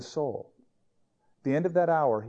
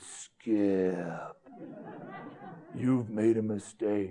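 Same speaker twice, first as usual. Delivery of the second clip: dumb, low, slow, put-on menacing villain voice. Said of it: "stop that dumb voice".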